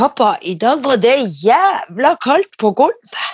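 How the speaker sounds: broad Northern Norwegian dialect speech. Quoting what their son said to someone in the bathroom, in Northern Norwegian dialect.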